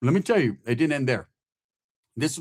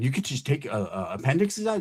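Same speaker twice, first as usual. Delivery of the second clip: ordinary delivery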